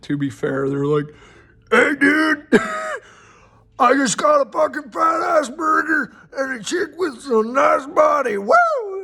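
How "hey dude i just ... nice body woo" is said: very high, swooping, lowbrow dude-bro ogre voice. Describing how the ogres in a game think; ogre voice. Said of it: "I don't know why I'm doing that voice for ogres".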